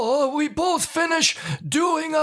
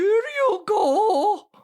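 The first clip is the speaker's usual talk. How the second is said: high put-on woman's voice with stretched words; 6 semitones higher than usual. Retelling handing something under a bathroom stall, he speaks imitating a lady's voice. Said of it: "to sound like a lady".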